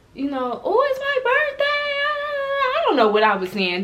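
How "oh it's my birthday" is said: put-on very high, loud, drunken shouting. Retelling being drunk in a car's back seat: imitating own drunken yelling. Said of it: "I'm yelling, I'm so loud".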